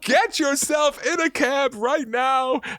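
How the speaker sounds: put-on panicked voice. Speaker quotes what she told him, imitating her panicked voice. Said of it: "the panic in her voice".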